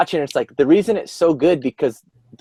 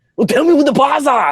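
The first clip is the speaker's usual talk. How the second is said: put-on heavy, thick German accent, pitched very high; 12 semitones higher, 3 dB louder than usual. Recalling a movie scene with a psychiatrist, doing a thick old German accent. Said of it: "thick old German accent".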